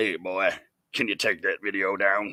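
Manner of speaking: very deep, hushed, soft character voice. She asks him to take the video down, Billy Bob Thornton in Sling Blade voice. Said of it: "her very Billy Bob Thornton in Sling Blade voice".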